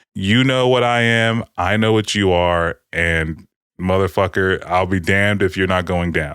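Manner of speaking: usual speaking voice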